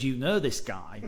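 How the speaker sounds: ordinary talk, nothing marked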